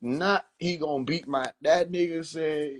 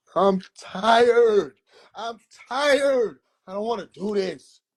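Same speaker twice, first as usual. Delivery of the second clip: mock worn-out, fed-up frustration, pitched up; 5 semitones higher, 4 dB louder than usual. Showing the listener how he sounded telling a man he was done, re-enacting his frustrated voice. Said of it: "That's how it sounded".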